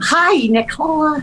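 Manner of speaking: very high, slow, sweet, adorable character voice. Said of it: "she talked like that".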